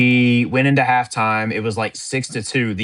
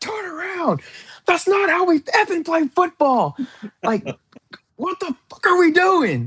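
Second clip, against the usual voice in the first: acted, furious, very high, swooping, angry screaming. Retelling what was said to the players before the game: retelling own angry screaming. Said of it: "I just started screaming and hollering".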